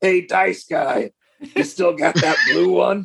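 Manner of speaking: hoarse rasping voice. Speaker retelling a stranger calling to him from the side of a building, raspy voice. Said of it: "I just hear this raspy voice from like the side of the building".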